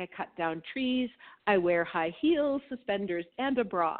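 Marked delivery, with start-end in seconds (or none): none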